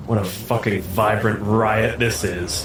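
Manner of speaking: drawn-out, stretched aside spoken to oneself. Narrating Whistlin's remark after he looks through the mask, muttering to himself. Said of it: "and just to himself kind of goes".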